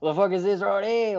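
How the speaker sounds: attempted Australian accent. Acting out an imagined boss finding the goods: attempted Australian accent. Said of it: "I can't do an Australian accent".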